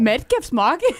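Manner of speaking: put-on, attempted Irish accent. Trying an Irish accent when asked to: attempted Irish accent. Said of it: "Go Irish".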